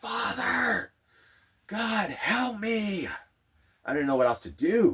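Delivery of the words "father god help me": put-on very high, very slow, drawn-out desperate yell. Retelling a breakdown on the floor, praying aloud: re-enacting yelling to god. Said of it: "I just start yelling".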